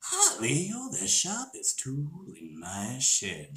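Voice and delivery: sing-song, deliberate villain drawl, high and swooping. Answering a viewer's request to do an impression: Joker impression. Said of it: "Do your Joker impression".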